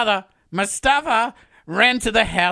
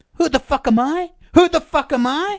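high-pitched, repeated, yelled shouting; 7 semitones higher than usual. Retelling how someone replied to a question: imitating someone yelling. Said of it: "replied by yelling".

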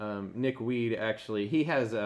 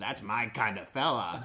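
puppet-show style character voice. Retelling a scene from a Muppets special: Animal voice. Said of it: "Animal from the Muppets walks by and he says".

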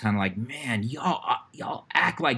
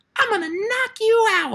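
put-on very high, loud, tiny little kid voice; 5 dB louder than usual. Quoting what the little dude in the hallway said from behind: little kid voice. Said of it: "I hear this little voice behind me go".

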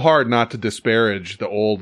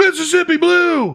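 put-on screaming voice, higher pitch; 3 dB louder than usual. Retelling a quarterback's play call on the field: imitating a quarterback screaming. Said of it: "he's screaming".

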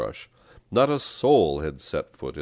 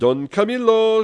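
very high, shrill, loud yell; 8 dB louder than usual. Narrator reads Pippone pushing to the front of the crowd, shouting. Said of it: "shouted Pippone".

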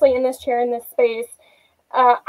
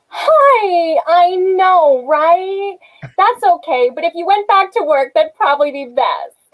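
high, falsely chipper, drawn-out "hi"; 5 semitones higher than usual. Asked to give a little flavor of the character, do the falsely chipper Melinda voice. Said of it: "give us a little flavor of her".

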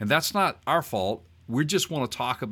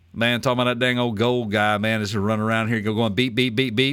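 loud, run-on, cartoonish rambling; 5 dB louder than usual. Riffing on lightsabers in Boomhauer voice. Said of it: "that's my best Boomhauer Star Wars thing".

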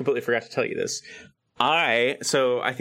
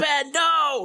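put-on stage shout, much higher. Speaker recalls shouting every line on stage, retelling shouting as Luke Skywalker. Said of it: "I'm like shouting everything".

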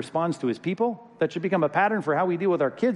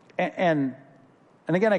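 usual speaking voice

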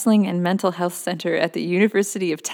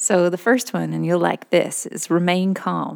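tried-on American Southern accent. Asked by a co-host, speaker presents the first item in a put-on Southern accent. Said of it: "you better do it in a Southern accent".

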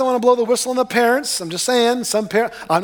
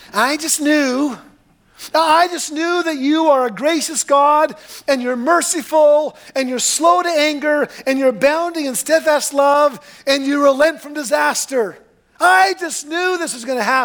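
whiny, whining voice; 4 semitones higher than usual. Speaker retells Jonah's words to God, imitating Jonah whining. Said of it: "kind of whining on him".

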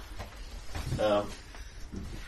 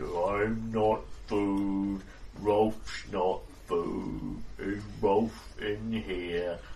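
slow, thick, low voice, drawn out. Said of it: "exceptionally thick-sounding person".

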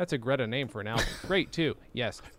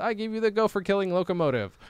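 ordinary talk

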